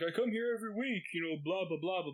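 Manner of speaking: bad put-on British accent. Retelling a British guy berating the owner, in a bad British accent. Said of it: "I can't do a British accent worth a shit".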